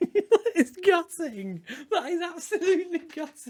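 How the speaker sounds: very high voice, laughter spilling through the words. Player reacting to a gutting moment for their team, laughing while talking. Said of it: "I don't know why I'm laughing".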